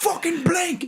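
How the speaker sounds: screaming, high-pitched, pitched way up high. Retelling a video of a man with a heavy New York accent: imitating someone screaming. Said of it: "screaming about it".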